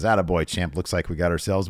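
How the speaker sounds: normal talking voice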